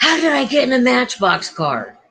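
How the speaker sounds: frantic, high-pitched, freaked-out, confused tone. Retelling what a guy riding along in the car said: imitating someone flipping out. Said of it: "he's, like, flipping out".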